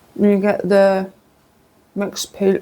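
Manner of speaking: talking with mouth full. Tasting the English tea cakes, talking with mouth full. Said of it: "I'm speaking with my mouth full".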